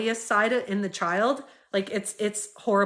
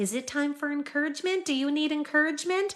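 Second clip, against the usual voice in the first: sweet, gentle, honeyed, kind voice, pitched up; 5 semitones higher, 3 dB quieter than usual. Retelling how adults offered children encouragement, imitating a sweet, kind voice. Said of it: "with this like sweet, kind voice coming in and saying like".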